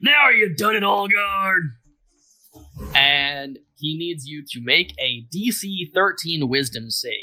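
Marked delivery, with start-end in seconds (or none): 0.0-1.6 loud, high, menacing yell. Voicing a character yelling at Olgard during combat: yelling. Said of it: "he is going to yell out".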